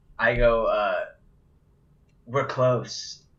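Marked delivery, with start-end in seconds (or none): 2.3-3.2 play-acted, theatrical, weighty, dramatic delivery. Retelling what was said to a companion in the game: imitating a dramatic delivery. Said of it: "I say it all dramatic".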